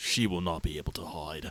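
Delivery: very solemn, grave, deep, serious voice. A character reassures his mistress, in a very serious voice. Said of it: "he takes a very serious voice".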